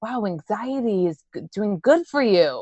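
put-on Yonkers, New York accent. Retelling what a man from Yonkers said, imitating his Yonkers accent. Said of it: "He's, like, from Yonkers. That's why I'm trying to imitate him".

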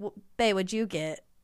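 put-on thick Southern accent. Imitating a food video woman asking her partner: imitating a thick Southern accent. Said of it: "she has, like, a very thick Southern accent".

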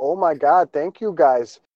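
put-on petite, squeaky, loud voice with northern Wisconsin accent. Retelling what a woman said to the group, in her northern Wisconsin accent. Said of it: "she's got that northern Wisconsin accent".

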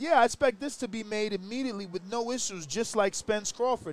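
normal talking voice

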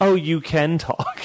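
high, snide, sassy put-on voice. Retelling a princess's reply to a dwarf, imitating a sassy, bitchy tone. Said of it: "It's like a real sassy, bitchy thing".

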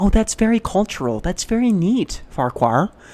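put-on polite interest. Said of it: "trying to do the same thing here".

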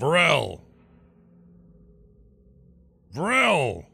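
high, swooping, in-character fantasy shout, calling out. A roleplay player, in character, calls out for Varel: in-character yell. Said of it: "so I yell".

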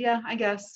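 plain

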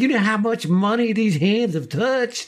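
odd, strange high voice. Retelling how Cam held up a man's hand for everybody, speak in Cam's weird voice. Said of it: "it says in his weird voice".

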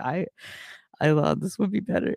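put-on laughing. Retelling what Cheesefoot said at a dead venue, imitating Cheesefoot laughing while talking. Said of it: "just starts breaking out laughing".

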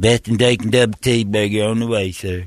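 put-on droopy cartoon dog voice. Playing a drive-thru worker answering a burger order: Droopy Dog voice. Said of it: "Thanks, Droopy Dog".

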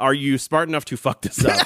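ordinary talk, nothing marked

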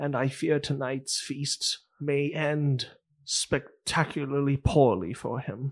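speaking very quietly. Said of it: "very quietly he goes".

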